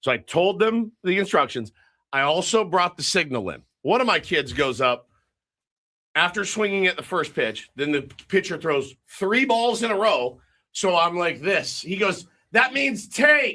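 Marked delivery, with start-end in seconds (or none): 12.5-13.5 put-on child voice, high blurted yell. Retelling a kid at bat calling out the signal: imitating a kid yelling. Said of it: "He yells it out".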